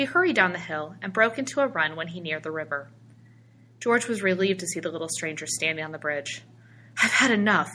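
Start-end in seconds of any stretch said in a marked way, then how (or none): 7.0-7.8 gasping, higher and louder. After running down to the bridge, a man speaks to the little stranger, gasping. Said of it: "he gasped".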